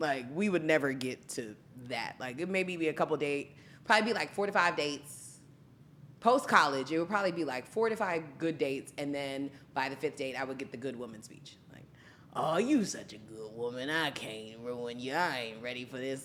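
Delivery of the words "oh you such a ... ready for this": put-on unhurried, low, slow older man's voice. A woman retelling the speech a date gave her by the fifth date; imitating an older man. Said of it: "Why you sound like you was dating fifty-seven year old?".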